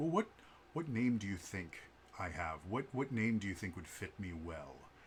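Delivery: very deep voice of a giant bunny. Retelling what a massive bunny said when people asked its name, very deep bunny voice. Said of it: "he had a very deep voice".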